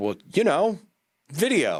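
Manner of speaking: high-pitched, mock clueless voice. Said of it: "And they're like".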